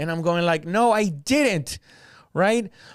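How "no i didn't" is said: mock heated, raised, pitched-up voice. Speaker retells denying an accusation in a heated argument, retelling raising his voice. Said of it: "But now I'm raising my voice".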